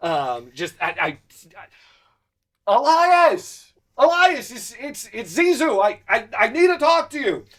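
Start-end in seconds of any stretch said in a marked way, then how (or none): 2.7-7.4 very high, loud shout. A character arrives at a gate calling for elias, yelling over the gate. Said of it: "you know yelling over the gate".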